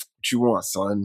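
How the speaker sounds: standoffish tone. Retelling a scene where a character answers a friend: imitating a standoffish tone. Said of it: "he's kinda being standoffish".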